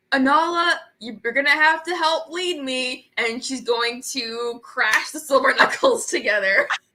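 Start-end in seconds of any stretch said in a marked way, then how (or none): 0.1-3.1 rallying, rousing shout, battle-cry style. Player has Kanari run into the center of the horde, Kanari shouting. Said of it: "she's gonna shout".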